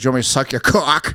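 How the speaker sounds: put-on Boston accent, girl's voice. Joking with friends about how a girl would talk, in a Boston accent. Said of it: "a girl with a Boston accent".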